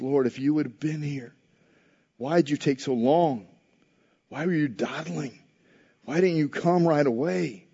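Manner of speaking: put-on disappointed tone. Retelling a woman's words to the Lord, acting out disappointment. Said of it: "I can hear the disappointment in her voice".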